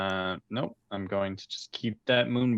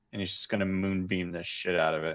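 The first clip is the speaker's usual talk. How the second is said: ordinary talk, nothing marked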